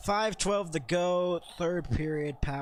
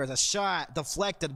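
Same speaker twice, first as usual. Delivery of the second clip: ordinary delivery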